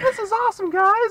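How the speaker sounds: put-on squeaky, very high, loud little-kid voice. Retelling a kid morphed into a full-size ranger, high kid voice. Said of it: "he still has a kid voice".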